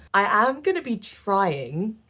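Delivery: slow, heavy stress on the word trying. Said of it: "emphasis on trying".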